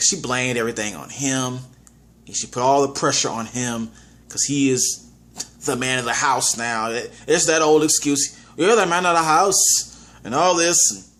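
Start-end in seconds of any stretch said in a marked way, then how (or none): 8.6-11.0 put-on Irish accent. Describing a movie, the speaker quotes a character's old excuse: Irish accent. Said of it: "that's my Irish accent".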